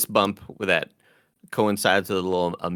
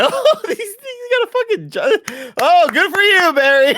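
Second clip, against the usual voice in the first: very high, very loud, shrill mocking sarcastic whoop; 10 dB louder than usual. Describing how he imagined a character's dad reacting, mock sarcastic cheering. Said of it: "his dad was like sarcastically cheering".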